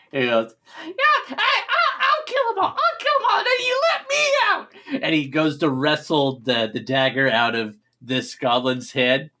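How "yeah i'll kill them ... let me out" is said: very high, swooping little goblin creature voice. Retelling a story, the speaker gives the goblin's line in a goblin voice. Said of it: "you see a goblin next to him he goes".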